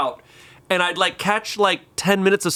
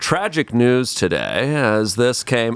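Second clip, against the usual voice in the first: serious news anchor voice, lower pitch; 7 semitones lower than usual. Showing how a sad story would be read: Tom Brokaw voice. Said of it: "I'm going Tom Brokaw".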